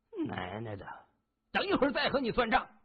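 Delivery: menacing, fierce, very high-pitched and rising. A narrator voices a young man threatening a waiter sitting on the ground: said fiercely. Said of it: "狠声说着".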